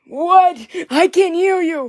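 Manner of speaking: odd, high-pitched doll-like character voice. Showing what each doll's voice is like, Tim's father doll voice. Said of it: "his voice, oh my lord, that's Tim's father. He goes".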